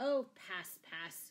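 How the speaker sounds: cried out impatiently. Sir Guy cuts in on the man listing his savings: cried impatiently. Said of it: "cried Sir Guy impatiently".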